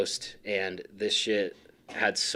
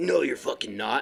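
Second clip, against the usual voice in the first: put-on confrontational drunk kid voice, higher; 4 semitones higher than usual. Retelling what a wasted kid said back at Hangtown: imitating a confrontational drunk kid. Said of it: "he was, like, confrontational".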